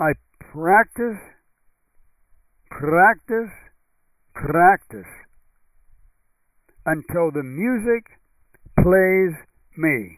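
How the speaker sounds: bad, slow, put-on Russian accent. Quoting what a professional pianist said, in a bad Russian accent. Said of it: "That's probably not a very good Russian accent".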